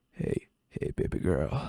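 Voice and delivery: very deep, low creepy-guy voice. Redoing the pickup line, the speaker says it in a creepy dude voice. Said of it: "I got to say it like a, a creepy dude".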